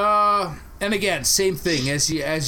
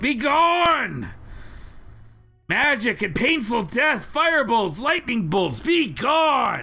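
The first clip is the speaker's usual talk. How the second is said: high, shrill, stretched-out puppet yell; 6 semitones higher than usual. Game master voices a puppet that looks up from its work: puppet yelling. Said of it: "the puppet looks up from its work and once again yells out".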